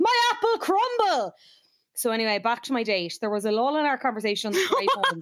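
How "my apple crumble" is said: very high-pitched, startled, flustered squawk. Telling a date story, act out the flustered woman who flung her apple crumble, imitating a squawk. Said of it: "and squawked".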